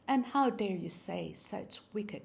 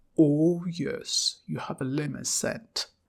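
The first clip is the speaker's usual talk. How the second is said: deep gruff engine-like rumbling voice, lower and louder; 5 semitones lower, 6 dB louder than usual. Reading aloud a man's line to a woman at church: deep gruff voice. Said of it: "in that lovely deep voice of his, gruff as a rumbling engine".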